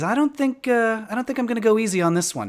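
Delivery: menacing, gloating tone. Voicing a character who refuses to go easy on the players: malicious. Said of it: "he smiles kind of maliciously at you".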